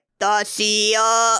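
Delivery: very monotone, flat voice. Retelling a scene where the boy taped in a closet says his name, monotone Toshio voice. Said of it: "very monotone".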